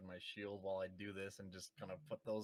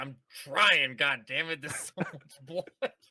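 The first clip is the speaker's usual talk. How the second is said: put-on struggling warrior voice, higher and louder; 7 semitones higher, 15 dB louder than usual. Voicing Vatan trudging through blood: in character as Vatan, struggling.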